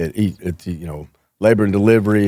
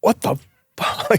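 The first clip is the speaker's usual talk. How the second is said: mock, mild, startled half-yell, kept light; 13 semitones higher than usual. Retelling the lieutenant after being knocked onto a table, imitating yelling. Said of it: "now he's yelling".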